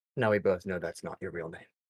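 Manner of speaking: whispering voice. Voicing a character who leans to a player's ear: whispering character. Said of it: "leans to your ear and whispers".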